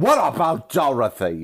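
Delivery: full, loud, swooping yell. Recapping a Wizard of Oz scene, quoting a yelled line: retelling a yell. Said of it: "why are you yelling?".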